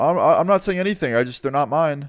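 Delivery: put-on stuttering voice. Retelling Donnie's reply when the cop points at the speaker, imitating Donnie stuttering. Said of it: "And like he was just stuttering".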